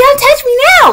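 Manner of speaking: put-on very high-pitched, shrill, child-like screaming tantrum. Retelling how a boy refused to leave the bathroom, imitating a child screaming. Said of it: "Like screaming, red, anger issues".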